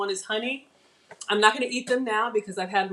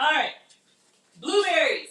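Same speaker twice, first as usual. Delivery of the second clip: high, yelled out loud, carrying across room; 5 semitones higher, 4 dB louder than usual. Moving on to the next item while talking to viewers, yelling. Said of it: "Sorry for yelling".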